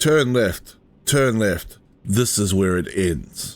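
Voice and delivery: ominous, sinister, menacing announcer voice. Imitating the navigation voice that sounded sinister: imitating a sinister GPS voice. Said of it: "G P S sounding so sinister there?".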